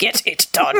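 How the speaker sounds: put-on very severe, stern, hard-edged German man's accent. Repeating the line just heard: imitating a very severe German man. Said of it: "turned into a very severe, like, German man".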